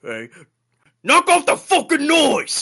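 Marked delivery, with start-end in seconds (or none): 1.0-2.6 very high, furious, rising angry shout. Voicing a guard annoyed by scraping noise: guard shouting angrily. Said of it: "he shouts at you".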